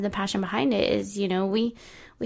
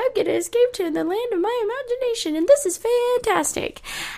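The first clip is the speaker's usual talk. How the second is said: voice shooting up several pitches, much higher; 14 semitones higher, 3 dB louder than usual. Describing escaping to the land of imagination, voice rising higher. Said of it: "And my voice just went".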